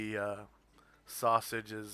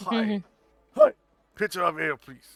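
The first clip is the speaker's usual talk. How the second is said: fake, practiced, very loud, swooping put-on bellow; 9 semitones higher, 11 dB louder than usual. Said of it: "kinda fakely deep voice".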